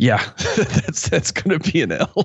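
high, slow speech broken up by laughter. Answering a prediction about a losing game, laughing while talking. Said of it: "I don't mean to laugh so hard".

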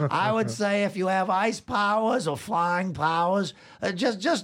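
high, slow, squeaky newscaster voice. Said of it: "what would it sound like if the Ice King were delivering the six o'clock news".

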